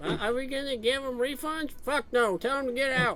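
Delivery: high, loud dwarf woman voice. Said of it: "she's like".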